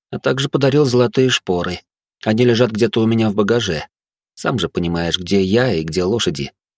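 ordinary talk

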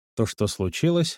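ordinary delivery, nothing marked

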